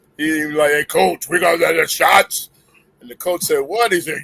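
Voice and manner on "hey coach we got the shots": slow, unhurried, drawn-out voice. Retelling what a man said to the coach after practice, imitating Art's deep voice. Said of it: "he had a deep voice like".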